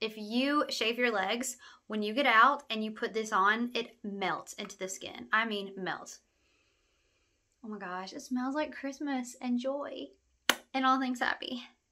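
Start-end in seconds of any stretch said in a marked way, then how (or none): 7.6-11.6 choked up, fighting back tears. Reviewing a body frosting that feels nostalgic, fighting back tears. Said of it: "I'm really fighting back tears".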